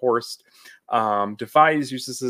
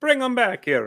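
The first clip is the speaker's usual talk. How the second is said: very high, exaggerated, caricatured Italian accent; 11 semitones higher than usual. Retelling the cook's line from the show: caricature of an italian accent. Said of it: "caricature of an Italian accent".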